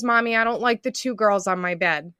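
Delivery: play-acted, tearful, crying two-year-old voice. Retelling a two-year-old's words in the night: imitating a crying toddler. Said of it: "she's crying and she goes".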